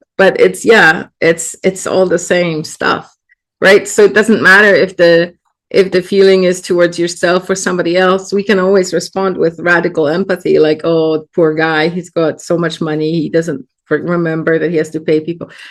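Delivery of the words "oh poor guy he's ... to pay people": normal talking voice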